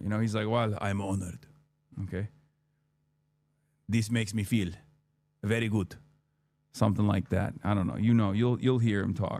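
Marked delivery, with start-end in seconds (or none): 0.5-6.0 put-on weak, light Greek accent. Retelling meeting him outside the hotel, the speaker imitates Giannis's accent. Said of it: "I'm not doing his accent justice right now".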